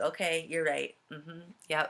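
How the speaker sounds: usual speaking voice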